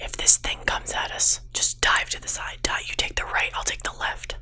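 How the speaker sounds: close, very quiet, breathy whisper. She whispers next to him as he aims at the monster, whispering. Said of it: "she like whispers next to him".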